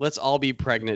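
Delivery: ordinary talk, nothing marked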